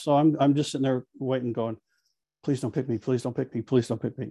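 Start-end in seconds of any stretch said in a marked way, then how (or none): 2.4-4.3 soft, rapid, rushed, run-together muttering. Retelling sitting on a panel hoping not to be picked: retelling saying it very fast. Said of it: "I was saying it so fast".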